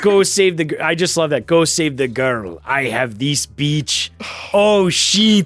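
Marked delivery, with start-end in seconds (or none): 1.5-5.5 slow, awful, very bad fake Russian accent. Mocking a film character's lines while discussing a scene; worst bad russian accent. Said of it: "the worst Russian accent I've ever heard".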